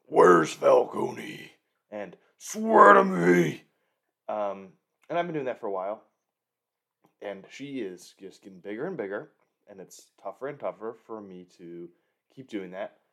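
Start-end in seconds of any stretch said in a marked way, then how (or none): 0.1-3.6 rough, very loud, slow, drawn-out rasp. Demonstrating a game the speaker plays with Margot, in a Batman voice. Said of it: "say things in a Batman voice".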